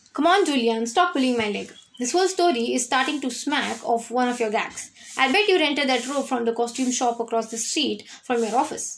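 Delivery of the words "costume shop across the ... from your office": ordinary delivery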